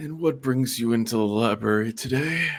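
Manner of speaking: put-on wise, ancient, magical wizened old man voice. Narrator voices a magical voice in a library greeting a visitor, wizened old man voice. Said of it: "it sounds like a wizened old man".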